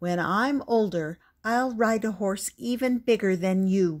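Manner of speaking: plain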